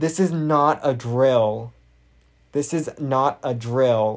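trembling, shaky, very slow, very drawn out. Retelling an intercom announcement during a lockdown, imitating a shaky voice. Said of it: "her voice is all shaky".

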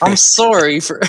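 forced sorry through gritted teeth. Acting out a forced apology someone insisted on, through gritted teeth. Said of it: "True gritted teeth".

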